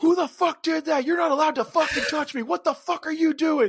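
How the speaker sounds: put-on very high, enraged, furious shouting. Retelling how a man behind a wall reacted to a shoulder tap: retelling an angry yell. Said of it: "he's sitting there yelling at an empty mask".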